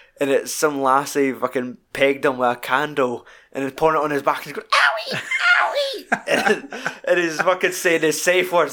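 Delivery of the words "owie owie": mock very high, swooping, girly squealing scream. Describing a film scene, imitating the man having wax poured on him: mock scream like a girl. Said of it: "he's screaming like a girl".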